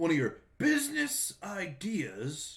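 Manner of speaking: slow, high, drawn-out mock repetition.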